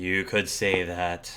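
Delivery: ragged, scraggly, machine-like robot voice. Describing a man feeding birds who sighs and answers, scraggly robotic voice. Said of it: "he says in a scraggly voice, robotic like voice".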